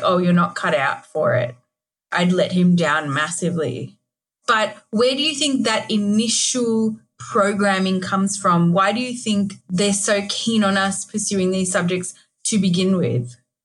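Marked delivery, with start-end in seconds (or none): 0.0-1.6 mock disappointed tone of voice. Quoting dad's verdict on the speaker's maths ability, imitating dad's disappointed tone. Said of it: "he said it with all this disappointment in his voice".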